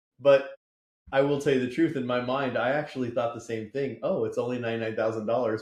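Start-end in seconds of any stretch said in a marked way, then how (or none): 4.0-5.6 hopeful, upbeat, optimistic tone. Retelling own reaction to the same quote: imitating own optimistic thought. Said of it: "but optimistically".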